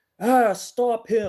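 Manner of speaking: high, loud, slow, dramatic dying cry.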